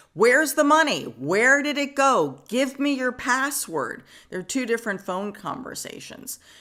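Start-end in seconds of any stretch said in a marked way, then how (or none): 0.2-4.0 high, demanding yell at top of lungs. Recounting a brother's recorded phone call, retelling a yell. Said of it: "you hear Keith yelling at him".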